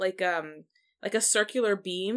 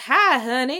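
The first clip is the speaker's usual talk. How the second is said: put-on Southern accent, louder; 5 semitones higher, 7 dB louder than usual. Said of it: "someone doing a [name] impression is the accent she has".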